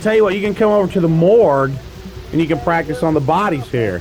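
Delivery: normal talking voice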